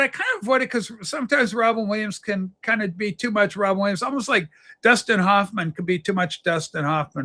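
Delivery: plain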